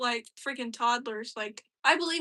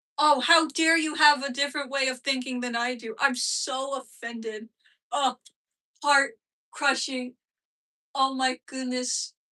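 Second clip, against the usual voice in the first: stupid, sarcastic, faux outrage; 3 dB louder than usual. Speaker mocks someone for thinking differently; mock-offended sarcasm. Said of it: "this is me being stupid and sarcastic".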